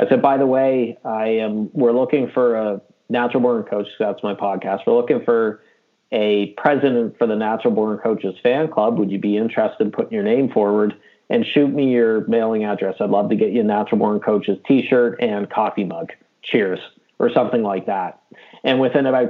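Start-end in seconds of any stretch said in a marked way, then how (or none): none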